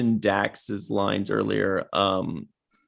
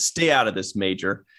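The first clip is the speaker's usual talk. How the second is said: mock authoritative, curt, dismissive tone; 2 semitones lower than usual. Quoting a character's line from a scene: imitating a dismissive, authoritative order. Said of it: "just very dismissively and authoritatively".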